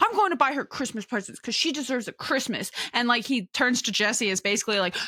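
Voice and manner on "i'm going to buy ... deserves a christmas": bristling, defensive, insistent tone. Speaker retells how a man got preemptively defensive, mock-defensive. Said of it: "he gets all defensive".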